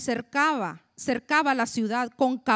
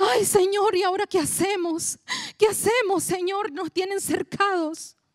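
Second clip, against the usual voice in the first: high, frantic, distressed, panicked crying out; 6 semitones higher than usual. Speaker acting out Elisha's servant crying to the Lord, mock-panicked crisis voice. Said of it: "Así sonamos algunos cuando estamos en crisis".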